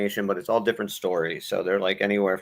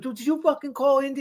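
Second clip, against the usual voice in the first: imitated yelling, higher pitch. Retelling a comedy skit where a roommate confronts his buddy: imitating someone yelling. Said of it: "he yells at his buddy".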